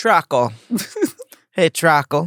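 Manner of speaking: put-on, high-pitched Jamaican accent. Puzzling over how to pronounce a word, the speaker tries it in a Jamaican accent. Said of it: "Why you say it with a Jamaican accent?".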